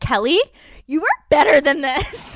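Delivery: shrill, very loud screaming and yelling. Retelling reacting to a reality show couple, imitating own screaming at the TV. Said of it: "screaming at the T V".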